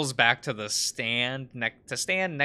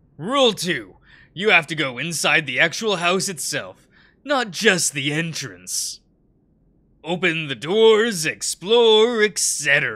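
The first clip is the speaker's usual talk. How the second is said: loud, high, throat-straining put-on character voice; 5 semitones higher, 8 dB louder than usual. Laying out the rules of the dare to the group, in a throat-straining put-on voice. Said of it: "That voice, it dries out my throat".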